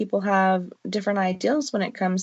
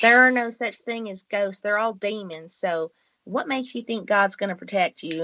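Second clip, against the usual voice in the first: put-on Southern accent. Retelling what an aunt said about the speaker's gifts: imitating an aunt in a Southern accent. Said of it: "generally I'll use a Southern accent on this".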